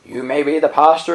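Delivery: put-on Scottish voice. Retelling what an older churchgoer once told the pastor about speaking too fast, imitating a scottish accent. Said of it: "in his Scottish voice".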